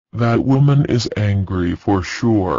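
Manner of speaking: plain reading voice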